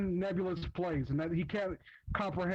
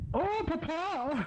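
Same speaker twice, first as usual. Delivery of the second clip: put-on mix of German boy and woman voice, higher; 10 semitones higher than usual. Reading a comic aloud with others, voicing Sonichu: Sonichu voice. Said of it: "can we ensure that [name] doesn't voice Sonichu?".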